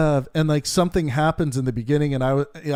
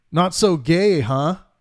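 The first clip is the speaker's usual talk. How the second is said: put-on pleased, proud, self-satisfied, pointed tone; 2 semitones higher than usual. Retelling what a woman said walking past at halftime, in a loud, proud voice. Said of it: "she says in a loud, proud voice".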